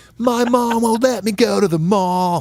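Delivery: very high, drawn-out, put-on pop-punk voice. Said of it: "it's like East Coast pop punk".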